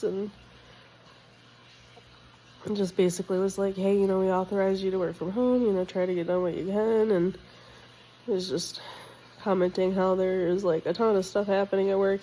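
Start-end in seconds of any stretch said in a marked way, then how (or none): none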